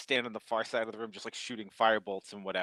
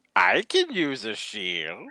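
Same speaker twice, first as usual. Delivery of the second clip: eerie, unsettling goblin voice with swooping pitch; 8 dB louder than usual. Voicing the goblin as it is handed a shield, creepy goblin voice. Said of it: "that's so creepy".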